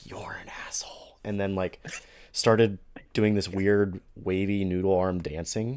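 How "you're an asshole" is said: barely voiced, very soft, breathy whisper. Telling how a woman came up to the table, imitating a whisper. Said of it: "whispered like".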